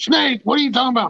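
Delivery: shrill, high, alarmed, freaked-out disbelief. Retelling her reaction to hearing about snakes: imitating someone freaking out. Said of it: "And she started freaking out".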